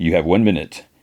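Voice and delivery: ordinary talk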